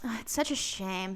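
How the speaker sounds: put-on fake apologetic villain voice. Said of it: "he sounded so, like".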